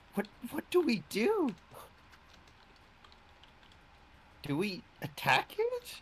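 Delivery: very high, swooping, puzzled, unsure, confused voice. Role-playing a character asking how to reach the thing, in a confused voice. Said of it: "I'm gonna say this in a confused voice".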